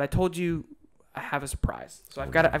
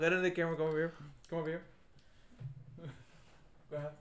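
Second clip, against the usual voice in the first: talking while chewing, mouth full, much quieter; 11 dB quieter than usual. Telling someone to come over to the camera: talking with mouth full. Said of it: "you talk very well with your mouth full".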